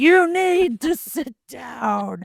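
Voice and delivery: play-acted, loud, very slow, furious yelling. Retelling how a magician yelled at six- and seven-year-olds, retelling angry yelling. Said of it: "he was like yelling".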